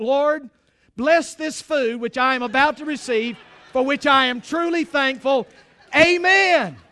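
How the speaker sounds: booming voice rising in pitch.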